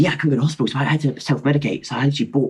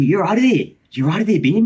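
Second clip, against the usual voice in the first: awful, pitched-up, put-on Australian accent; 6 semitones higher than usual. Retelling what a girl said to you, bad Australian accent. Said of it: "That was Australian".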